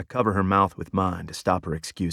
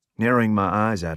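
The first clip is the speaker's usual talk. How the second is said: ordinary delivery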